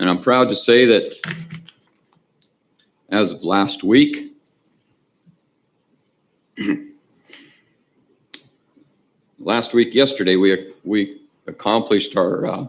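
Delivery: choked-up, halting voice catching with feeling. Death investigator announcing the office's certification, getting emotional. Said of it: "sorry, I get emotional on this one".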